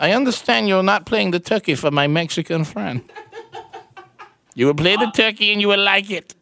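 put-on German accent. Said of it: "that sounded like a German requesting it".

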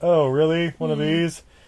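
put-on unfazed, calm voice. Retelling the pilot threatening to crash the plane: imitating nonplussed Bond. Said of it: "Still kind of nonplussed".

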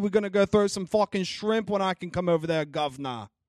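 bad fake British accent. Host giving a shout-out to Australian listeners, in a bad British accent. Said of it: "That was British, but it works".

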